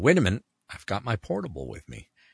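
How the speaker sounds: plain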